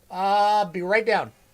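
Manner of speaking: loud, high shouted call-out. Speaker breaks off talking to their audience to call out to someone, yelling. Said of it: "Sorry about yelling there".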